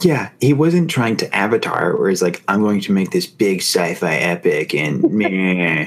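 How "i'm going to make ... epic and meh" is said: unhurried slow delivery, "meh" stretched out. Imitating a film director talking about making a sci-fi epic: James Cameron voice. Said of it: "I like your James Cameron voice".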